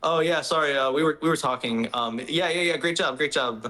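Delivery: play-acted words broken up by laughter. Retelling the engineer's radio reply to the driver: imitating Adami laughing while talking. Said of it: "he's, like, laughing and he's just like".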